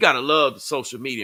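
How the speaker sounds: heavy, dry, tongue-in-cheek irony. Speaker on people judging shared experiences on social media: sarcastic. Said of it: "I'm saying it sarcastically".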